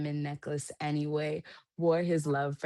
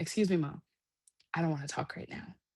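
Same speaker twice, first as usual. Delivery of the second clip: put-on polite child voice. Mother quoting her daughter talking back, mimicking a polite child. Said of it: "and she's so polite. She goes".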